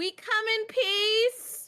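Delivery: very high, drawn-out yell. Calling up to an archer standing above the corn: yelling up into the air. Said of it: "but I'm just gonna yell".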